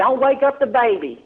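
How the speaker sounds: high, hollered shout. Retelling how a man across the lot yelled as he reached for the dish: imitating someone hollering. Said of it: "he hollers".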